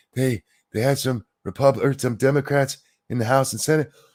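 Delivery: put-on breathless panting. Imitating how he launches into talking points, mimicking breathless panting. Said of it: "why does he sound like he just ran".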